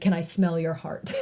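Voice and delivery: mock romantic delivery. Retelling what the boy asks the girl: imitating a romantic declaration. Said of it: "very romantic sort of, uh, declaration".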